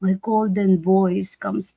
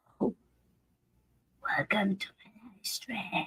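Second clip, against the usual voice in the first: desperate, breathy whisper; 13 dB quieter than usual. A streamer mimics how they sounded two days ago, imitating their own desperate voice. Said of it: "Like I sound like I'm so desperate".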